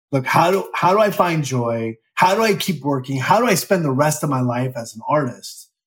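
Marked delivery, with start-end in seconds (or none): none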